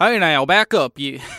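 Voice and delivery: put-on Nassau Southern accent. Asked to play a guard telling Victoria to back up, Nassau Southern accent. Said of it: "I do that Nassau Southern accent".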